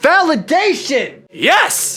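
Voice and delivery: high voice cracking, breaking mid-word. Speaker talking about poems they have written, voice cracking. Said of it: "Voice crack again".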